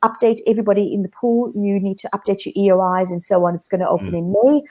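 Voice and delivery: normal talking voice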